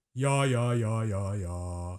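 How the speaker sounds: stepping down each ya note.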